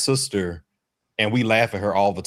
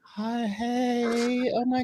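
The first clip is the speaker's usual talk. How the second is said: put-on softened sweet voice, higher and quieter; 5 dB quieter than usual. Imitating a sister on the phone with a new partner: softened voice. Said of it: "her voice softens".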